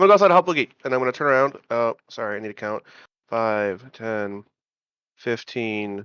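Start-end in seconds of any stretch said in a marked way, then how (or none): 0.0-0.7 very fast, raised, high-pitched gabble. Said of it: "speaking twice as fast as normal".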